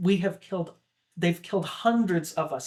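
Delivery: ordinary talk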